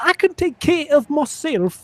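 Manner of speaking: put-on very high, thick Welsh accent. Describing the cat girl met early in a game, in Nia's almost incomprehensible accent. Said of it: "her accent is like almost incomprehensible".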